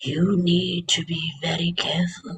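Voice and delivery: soft, wise, spiritual little turtle character voice. Recalling a turtle from a cartoon and quoting it, little spiritual turtle voice. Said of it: "There was this little spiritual kind of turtle".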